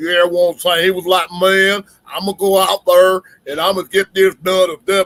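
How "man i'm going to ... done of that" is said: put-on big Southern drawl, louder, announcer style. Recalling how a Florida player talked before he became a broadcaster, in Chris's big Southern drawl. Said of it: "he had the biggest Southern drawl".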